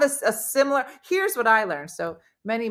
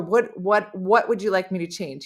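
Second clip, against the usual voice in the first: normal talking voice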